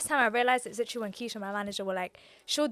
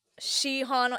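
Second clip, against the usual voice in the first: mock mispronunciation, stress on "she"; 2 semitones higher than usual. Showing how people mispronounce her name: imitating others' mispronunciation, stressing she. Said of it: "They emphasize the she".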